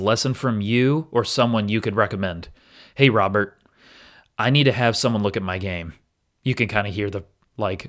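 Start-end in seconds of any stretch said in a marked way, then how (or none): none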